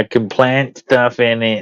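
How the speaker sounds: slow, drawn-out, insistent, emphatic mild shout. Imitating the other speaker during an argument: imitating someone shouting. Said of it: "You're like".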